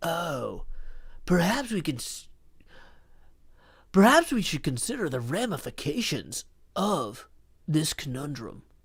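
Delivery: soft, thoughtful, pondering musing. Contrasting two voices, doing a thoughtful Ted voice. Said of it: "Ted is a little bit more thoughtful".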